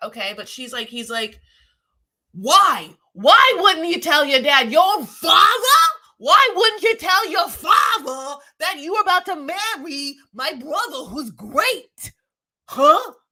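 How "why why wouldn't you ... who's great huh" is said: put-on slow, high-pitched New York accent. Speaker retells what a man said, doing it in a New York accent. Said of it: "It's very New York".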